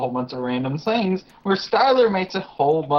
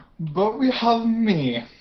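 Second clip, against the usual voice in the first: clumsy, bad put-on Russian accent, pitched up; 8 semitones higher than usual. Host opening the episode alone while Xavier is away, bad Russian accent. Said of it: "even I'm not that good at doing a Russian accent".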